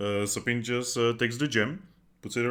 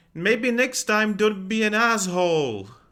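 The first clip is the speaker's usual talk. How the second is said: very high, loud, drawn-out yell; 10 semitones higher, 6 dB louder than usual. Voicing a character yelling at someone walking away: yelling. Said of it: "she's just gonna yell".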